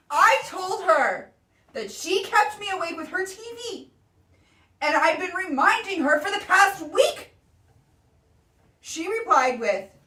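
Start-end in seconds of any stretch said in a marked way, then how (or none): 0.1-7.3 exaggerated, put-on dramatic reading. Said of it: "Do you like my dramatic reading?".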